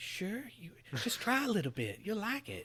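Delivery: creepy hushed voice. A speaker voices the publisher pitching games as a service, creepy Square Enix voice. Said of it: "that was creepy voice".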